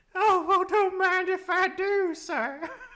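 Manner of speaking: put-on Southern belle voice. Asked to sound like an old Southern Belle, playing along. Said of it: "Sound like a Southern Belle".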